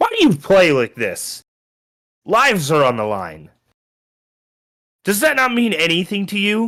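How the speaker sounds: frustrated, fed-up, high-pitched bursting outburst. Voicing an NPC who throws down his shield at a player: very frustrated NPC outburst. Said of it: "he just gets very frustrated and he throws down his shield and says".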